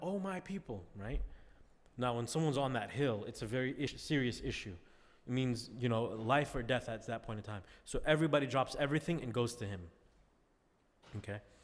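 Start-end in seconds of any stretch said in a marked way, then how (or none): 0.0-0.8 play-acted siren-like call, high and carrying. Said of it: "he starts yelling out".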